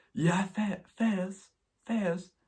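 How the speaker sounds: put-on posh Southern English accent. Attempting the accent of a posh English girl: attempted posh English girl accent. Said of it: "I can't do the accent".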